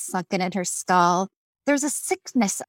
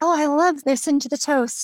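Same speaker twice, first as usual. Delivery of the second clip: high put-on dog voice; 7 semitones higher than usual. Voicing a dog that leans in while toast is mentioned: speaking as the dog. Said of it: "She's like".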